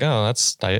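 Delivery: normal talking voice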